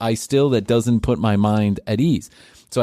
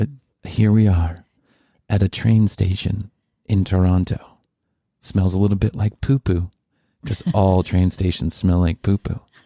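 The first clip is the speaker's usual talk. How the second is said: calm, soothing bedtime narration voice; 3 semitones lower than usual. Showing the narrator style they just described: soothing voice. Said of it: "Like like this".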